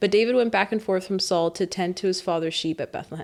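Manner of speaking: ordinary talk, nothing marked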